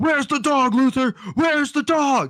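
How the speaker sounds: put-on shrill, very high furious yell. Retelling how he went straight to Lex Luthor's desk, retelling an angry yell. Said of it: "and he's like yelling".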